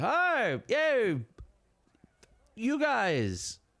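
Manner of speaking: put-on drawn-out drunk voice. Describing a man drinking late in the evening, the speaker voices him: drunk voice. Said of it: "he's sort of sitting there drinking".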